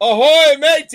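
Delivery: shrill, booming, very loud, high yell. Retelling calling out to the boat next to them: imitating own loud yell. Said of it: "And I yelled to the boat".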